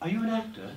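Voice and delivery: high, pretentious, pompous bad British accent.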